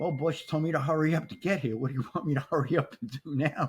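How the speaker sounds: play-acted dry, wry, sarcastic tone. Retelling a remark to the boss at a fire: imitating own sarcastic remark. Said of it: "I kinda sarcastically said to".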